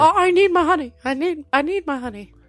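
whimpering cartoon bear voice. Trying out cartoon voices with others, a whimpery Winnie the Pooh voice. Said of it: "Pooh's gotta have like a whimpery voice".

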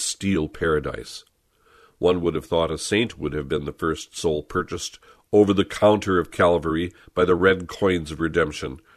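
ordinary delivery

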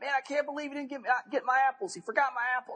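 yelling way up in a very high voice. Retelling how a blind man yelled at his companions: imitating a man yelling. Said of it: "he's yelling at his guys".

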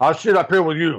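put-on voice done with pride. Retelling what Andre said when offered the back seat: Andre voice. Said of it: "and my great Andre voice".

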